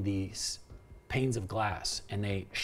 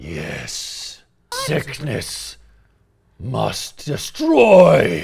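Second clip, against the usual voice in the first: very loud growled beast voice, swooping; 3 semitones higher, 14 dB louder than usual. Narrating to players, voicing a creature that speaks through its growl: growling beast voice. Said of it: "It growls, and that growl ... in the growl, it says".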